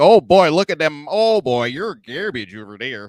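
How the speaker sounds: put-on Chicago accent, loud and high. Imitate two funny guys from Philly who talk like they're from Chicago, in a put-on Chicago accent. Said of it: "they talk like they're from Chicago".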